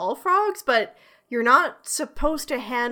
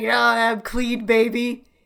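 sleazy bar guy voice; 3 dB louder than usual. Picturing the frog as a sleazy dude at a bar, sleazy bar guy voice. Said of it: "Like some fucking sleazy dude at a bar".

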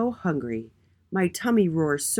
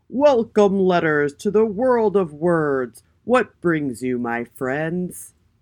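stately, booming regal king voice; 7 dB louder than usual. The king welcomes the nervous letters at his castle, booming regal voice. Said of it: "In his regal voice, he boomed".

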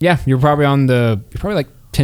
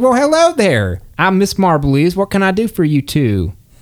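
put-on pitched-up old half-orc woman voice; 5 semitones higher than usual. Narrator voicing an older half-orc woman greeting two visitors, Miss Marbley voice. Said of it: "there's an older half-orc woman sitting there".

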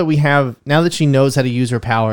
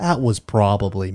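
put-on American accent, low, soft and quiet; 4 semitones lower, 5 dB quieter than usual. Showing how the actor's American accent lowers his voice: Benedict Cumberbatch's American accent, lower voice. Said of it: "his American accent puts his voice in a lower".

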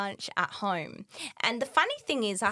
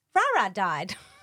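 mock emotionless deadpan tone, louder; 5 dB louder than usual. Retelling how Mum broke the news at family lunch, mock-deadpan. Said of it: "Like just deadpan like that".

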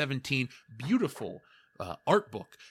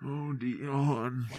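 hand-muffled, echoing, weird voice, quieter; 4 dB quieter than usual. Demonstrating the voice used to mess with him, muffled through hand. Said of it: "I'll muffle my hand and use the reverberation off the door".

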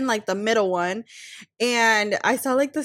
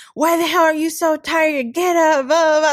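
put-on irritated, angry father voice; 4 semitones higher, 6 dB louder than usual. Retelling how a dad reacted on finding the speaker asleep: imitating an angry dad. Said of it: "he would be so mad".

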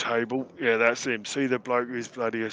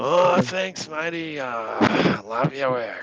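put-on loud, sloppy, beery, slurred drunk voice; 2 semitones higher, 6 dB louder than usual. Voicing a tavern patron woken by a tankard: drunk voice. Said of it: "talk in a drunk accent".

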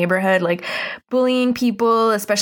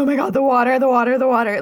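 high, frantic, rattled-off panicked babble; 5 semitones higher than usual. Retelling how Cat reacts as the ice melts: imitating Cat freaking out. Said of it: "Cat starts freaking out".

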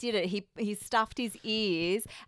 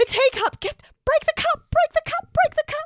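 urgent, very high-pitched, very loud yelling; 8 dB louder than usual. Retelling watching a movie at home: imitating someone yelling urgently. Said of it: "I started yelling at the T V".

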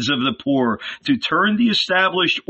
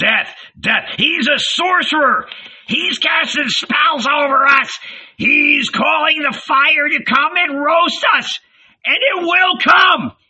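very high, shrieking, screeching cry; 12 semitones higher, 3 dB louder than usual. An old man in the crowd turns on Jesus, screeching. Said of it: "The old man with the double hump screeched".

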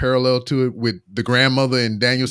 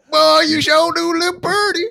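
very high, rough, creaky hillbilly voice; 3 dB louder than usual. Recounting a scripted gas station scene, imitating a hillbilly redneck. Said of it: "the hillbilly redneck stereotype at the gas station".

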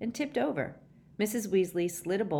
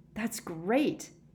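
gasping the words out; 3 semitones higher than usual. Harry answers Mrs. Weasley after swallowing very hot soup, gasping. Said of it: "he gasped".

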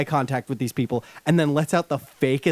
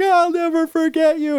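put-on very high, loud, shrieking scream; 5 dB louder than usual. Speaker retells a scene from a movie trailer: retelling a scream. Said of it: "And he's like screaming".

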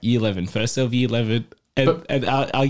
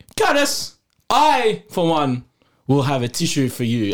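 slow, grand, lofty and stately noble manner; 9 semitones higher than usual. Retelling how someone stood up and offered the speaker a tissue; mock-noble tone. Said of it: "he said it very nobly".

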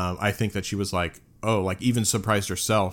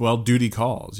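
put-on sarcasm, higher; 3 semitones higher than usual. Recapping a scene where she is short with him after his apology, mock-sarcastic retelling. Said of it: "kind of like sarcastically".

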